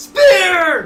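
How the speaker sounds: high, loud hype scream. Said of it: "I think I would be screaming".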